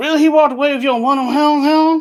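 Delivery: high-pitched put-on Cajun accent. Retelling a scene with a Cajun fisherman: imitating Steven Seagal's put-on Cajun accent. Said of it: "he'd start talking like that".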